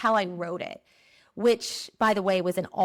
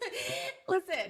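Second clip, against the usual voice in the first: laughing through the words. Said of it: "I'm laughing".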